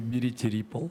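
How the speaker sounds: ordinary talk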